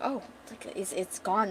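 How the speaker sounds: breathy whisper in shocked, stunned disbelief. Retelling a scene as a character finds it is gone: imitating shocked disbelief. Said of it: "in disbelief. She's shocked".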